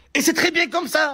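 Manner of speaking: furious woman's high, angry yelling shout. Comic playing a woman asked if she's in a couple, as an angry shouting woman. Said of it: "Pourquoi tu cries? Pourquoi tu t'énerves?".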